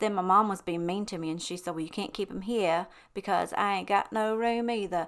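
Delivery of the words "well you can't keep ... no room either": put-on Southern accent. Quoting her mom refusing to keep the eggs, in a Forrest Gump accent. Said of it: "I don't know why I just did that accent".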